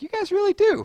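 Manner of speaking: squeaked out way up high. Mocking their own earlier high voice to viewers, sound like Mickey Mouse. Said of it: "I think I went like Mickey Mouse".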